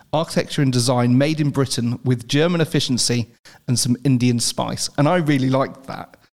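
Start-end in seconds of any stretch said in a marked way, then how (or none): none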